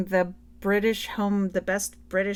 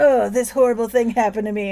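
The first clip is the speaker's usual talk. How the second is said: put-on self-pitying voice, louder; 2 semitones higher, 7 dB louder than usual. Retelling a film scene with Angelina Jolie: imitating Angelina Jolie's self-pity. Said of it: "doing all this pity stuff".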